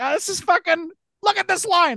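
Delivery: very high-pitched, furious yelling. Imagining Bill Burr on a leash, complaining about a line: imitating Bill Burr yelling. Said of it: "he would just be yelling".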